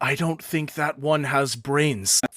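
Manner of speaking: loud stage whisper, pushed enough to carry. Narrating a dead-silent crowd, voicing one person in it: loud whisper. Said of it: "loudly whisper".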